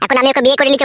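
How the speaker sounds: plain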